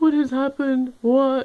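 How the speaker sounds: mock crying, high-pitched, panicked, shocked disbelief. Retelling finding everything gone, imitating own past panic. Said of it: "I'm sitting there crying, freaking out".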